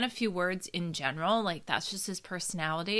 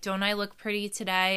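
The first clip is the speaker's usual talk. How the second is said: ordinary delivery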